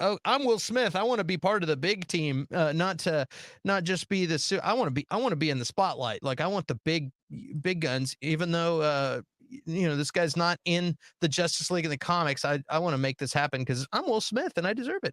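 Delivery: ordinary delivery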